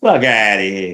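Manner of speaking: fake put-on Italian accent. The speaker shows off what he calls his italian voice, put-on italian accent. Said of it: "My Italian voice".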